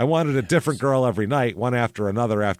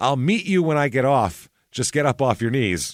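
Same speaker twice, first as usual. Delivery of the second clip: mock pleading woman's voice, pitched higher; 3 semitones higher than usual. Retelling a woman's reply while the speaker kneels before her, imitating a pleading woman. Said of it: "Just please".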